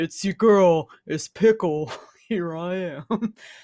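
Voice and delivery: put-on very low voice. Signing off as Pickle after being asked to talk lower: put-on very low voice. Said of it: "Let me just talk really low right now".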